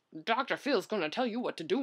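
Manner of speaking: fake Southern TV host voice. Imitating a talk show host who tells people what to do: terrible Doctor Phil accent. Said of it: "That was a terrible accent".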